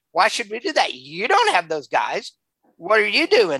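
acted, fast, scornful, taunting, mocking tone. Retelling how a group answered a request for food, retelling a mocking reply. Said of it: "They mocked him".

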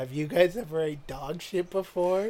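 confiding hush, voice dropped soft and low. Retelling a guy leaning in close to the group, in a lowered voice. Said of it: "lowers his voice".

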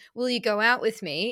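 ordinary talk

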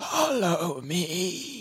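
soft, rasping creature voice with drawn-out "me". Narrating a creature that hobbles up to you and speaks, raspy voice. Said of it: "with a raspy voice says".

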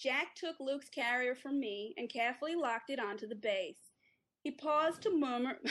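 put-on American accent. Asked to read a passage aloud, the speaker tries an American accent. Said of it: "here's you in an American accent".

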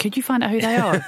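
imitated calm character voice. Retelling a film scene after the phone goes down: imitating Les Grossman speaking calmly. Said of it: "says to his assistant really calmly".

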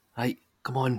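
usual speaking voice

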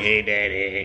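put-on croaky child's frog voice. Retelling how a child tugged at him in the morning: imitating a frog voice. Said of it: "with the frog voice and everything".

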